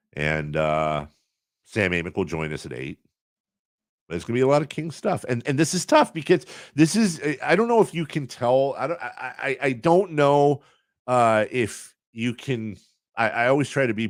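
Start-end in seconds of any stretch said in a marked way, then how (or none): 5.3-13.3 pitched-up stammer, repeating word openings. Announcing the schedule to listeners: stuttering. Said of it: "that's why I'm stuttering more than usual".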